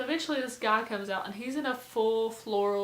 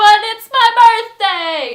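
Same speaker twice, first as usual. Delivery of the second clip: stubborn, very high, very loud insistence; 11 semitones higher, 21 dB louder than usual. Retelling the man who refused to turn it down on his birthday, imitating someone getting louder. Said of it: "he just kept saying this and getting louder".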